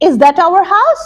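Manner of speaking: rising tune ending high on house. Demonstrating intonation on example sentences, reading a question with rising intonation. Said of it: "That is our rising intonation".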